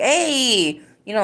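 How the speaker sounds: put-on mimicked New York accent. Recalling the accents around them in new york, doing a put-on new york accent. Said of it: "like a New York accent".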